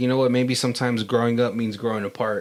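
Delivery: ordinary delivery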